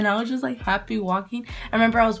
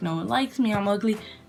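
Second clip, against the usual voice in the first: usual speaking voice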